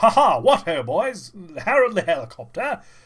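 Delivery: booming voice like a dashing flyer. Describing how Harold the Helicopter is usually voiced, doing Harold the Helicopter RAF voice. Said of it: "that R A F classic British plucky pilot kind of voice".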